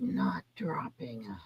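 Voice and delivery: hushed, barely voiced, very soft breathy whisper. Imitating Joe saying he is not dropping out: whispered impression of Joe. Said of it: "he was whispering".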